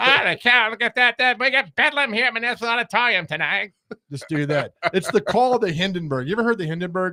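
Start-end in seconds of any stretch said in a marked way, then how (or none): 0.0-3.7 put-on pitched-up old-timey radio color commentator voice. Joining a mock game broadcast as color commentator, in an old-time color commentator voice. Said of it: "I'll do the same voice as the color commentator".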